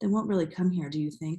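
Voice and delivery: ordinary delivery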